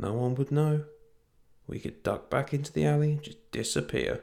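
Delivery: soft murmur. With her bow raised, she murmurs to the others: murmured. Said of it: "She murmured".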